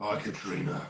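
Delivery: spooky, breathy ghostly whisper. Performing a viewer's request to say her name: ghost voice. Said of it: "she wanted me to say her name in ghost voice".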